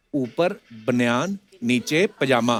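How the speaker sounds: slow, deliberately mouthed words.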